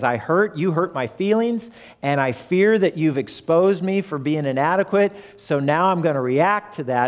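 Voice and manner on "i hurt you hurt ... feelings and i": ordinary delivery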